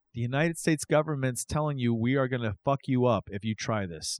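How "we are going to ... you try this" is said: normal talking voice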